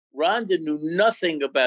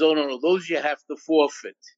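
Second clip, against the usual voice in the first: normal talking voice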